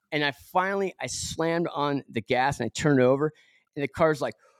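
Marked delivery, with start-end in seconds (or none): none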